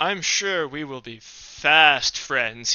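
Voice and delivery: slow, sarcastic, insincere friendliness. Voicing a character leaving the room: sarcastic. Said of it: "he says sarcastically".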